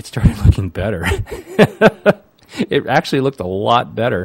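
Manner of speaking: loud, laughing delivery while talking.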